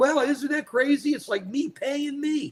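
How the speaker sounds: amused, chuckling, laughing through the line. Retelling how Trump reacted to the deal: imitating Trump laughing. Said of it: "And he's laughing like".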